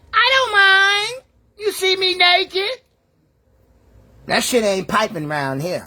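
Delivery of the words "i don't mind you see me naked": high, slow, deliberate, drawn-out mom voice. Reacting to a video of a mother, imitating the mom in the video. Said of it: "That's a voice like".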